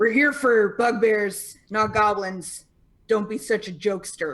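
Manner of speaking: rough, gruff delivery. Voicing a character who translates for the party: gruff voice. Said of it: "gruffly translates".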